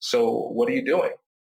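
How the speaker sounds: light, casual, easygoing, friendly tone. Explaining how email tone gets misread, showing the friendly version, casual friendly tone. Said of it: "it could be Kwame's just like".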